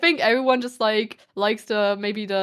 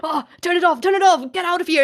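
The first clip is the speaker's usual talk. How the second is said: mock all-out screaming, high and loud; 9 semitones higher, 6 dB louder than usual. Retelling how a TV character shouted at viewers: imitating Bernd das Brot screaming.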